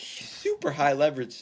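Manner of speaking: voice cracks upward mid-phrase. Discussing a football player with a co-host: voice crack. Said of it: "I just had a voice crack".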